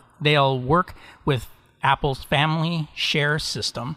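slow, careful, deliberate word-by-word delivery. Reading out a news item with a tongue twister, the speaker says it slowly. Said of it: "I had to say that slowly".

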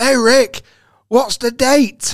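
smug, teasing, high, loud, slow drawn-out delivery.

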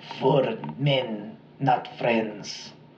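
very slow, clumsy, bad German accent. Retelling a dying man's last words: really bad German accent. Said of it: "that was a really bad German accent".

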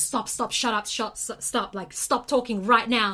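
loud, insistent shout. Retelling how someone at dinner grabbed the speaker's shoulders: imitating a loud shout. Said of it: "he was saying it so loud".

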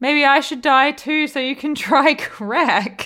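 mock, high-pitched yelling outburst. Retelling what Miranda yells at Brady at the funeral: imitating Miranda yelling. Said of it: "Miranda yells at him and goes".

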